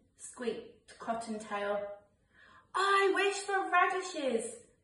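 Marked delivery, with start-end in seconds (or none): 2.7-4.5 very high, loud, excited shouting. A bunny makes a wish for Father Christmas at bedtime, yelled. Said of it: "yelled Peter".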